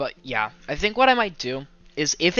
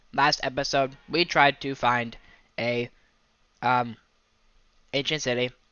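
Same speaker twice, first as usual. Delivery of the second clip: robot-like delivery, slower. Streamer recapping the last Minecraft episode, talking like a robot. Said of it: "I don't know why I'm talking like a robot".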